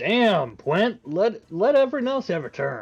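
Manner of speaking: shouting out. Player voicing Corvus rushing into the fight, calling out to Gwent. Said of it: "He's gonna call out".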